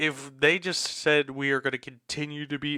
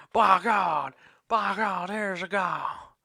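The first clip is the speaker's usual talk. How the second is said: rough, high, slow rural drawl, words drawn out; 5 semitones higher than usual. Imitating a WWE figure's famous line: Jim Ross voice. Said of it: "trying to act like ... Jim Ross".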